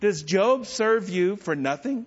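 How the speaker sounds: heavily sarcastic. Retelling Satan's reply to the Lord in Job: imitating a sarcastic reply. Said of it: "his response was very sarcastic".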